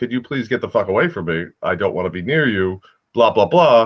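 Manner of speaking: ordinary talk, nothing marked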